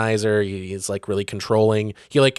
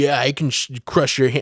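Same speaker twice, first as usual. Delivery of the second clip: put-on macho tough-guy bravado, higher; 4 semitones higher than usual. Retelling a book scene where an army lieutenant acts macho: imitating a macho boast. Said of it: "the macho thing where he's like".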